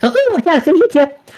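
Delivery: tiny, very high-pitched little pixie voice. Narrating a tabletop game, the game master voices the little pixie in the back: little pixie voice. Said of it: "the little pixie in the back go".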